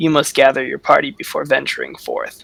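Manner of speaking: ominous, rough, swooping voice. Narrating a voice the players hear at the door, ominous voice. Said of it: "you hear this ominous voice".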